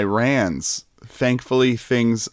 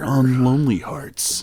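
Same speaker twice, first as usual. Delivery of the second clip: put-on movie trailer announcer voice, higher; 3 semitones higher than usual. Taking a turn in a game, announcing Lonely Hearts in a movie trailer announcer voice. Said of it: "I'm turning into a movie trailer guy".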